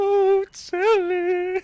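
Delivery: shrill, very high, loud ghostly voice. Recalling the ghost's voice from a remembered story: high-pitched ghost voice. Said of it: "what kind of voice the ghost had".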